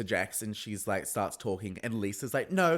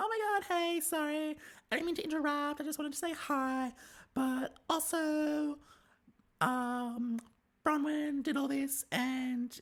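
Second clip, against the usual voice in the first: put-on annoying voice, higher and quieter; 5 dB quieter than usual. Retelling how a castmate interrupts to say hi, imitating Brittany's annoying voice. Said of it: "I'm gonna stop talking like that".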